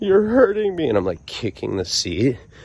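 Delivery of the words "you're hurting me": acted blubbering crying babble, very high, shrill, loud, sobbing. Retelling being in a minivan back seat, reenacting crying babble. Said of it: "full-blown bitch babble mode".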